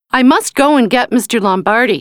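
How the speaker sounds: usual speaking voice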